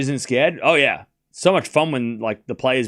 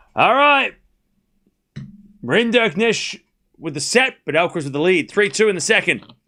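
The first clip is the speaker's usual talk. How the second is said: usual speaking voice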